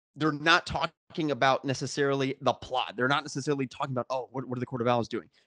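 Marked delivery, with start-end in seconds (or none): none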